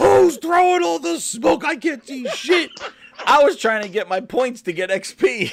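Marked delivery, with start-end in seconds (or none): 0.0-2.7 mock, shrill, very high-pitched screaming. Retelling teammates in a match: imitating teammates screaming. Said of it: "was screaming".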